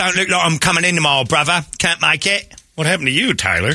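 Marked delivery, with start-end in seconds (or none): 0.0-2.5 fake Cockney accent, pitched higher. Joking about calling in sick to work: put-on Cockney accent. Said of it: "They're breaking out the Cockney accents".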